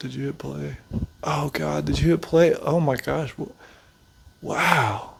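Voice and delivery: barely conscious, dazed rambling. Imagining a barely conscious boxer asking if they're recording: imitating Jake Paul. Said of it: "He's like".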